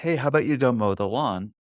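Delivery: ordinary delivery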